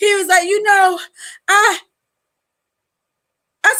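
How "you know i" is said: forced, fake crying voice, higher in pitch. Retelling how an ex tried to cry: imitating ex trying to cry. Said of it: "my ex tried to cry in front of me".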